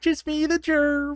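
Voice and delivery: tiny little voice, very high. Podcast guest introduced by the host, answering with a small voice. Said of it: "He's got a small voice today".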